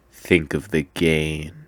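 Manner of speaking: very low, cold, quiet voice. Telling a story where Wonka answers a plea to think of the cost, deep and cold. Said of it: "Wonka just says in a deep, cold, calculating voice".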